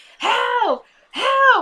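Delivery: shrill, very high screaming cry. Retelling a story about Randall, the speaker acts out her cries: imitating a scream for help. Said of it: "she starts screaming".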